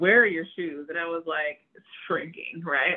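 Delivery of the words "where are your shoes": play-acted scornful, disgusted, disdainful tone. Retelling her reaction at the front door: imitating disgusted scolding. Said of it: "the disgust and the disdain on her face".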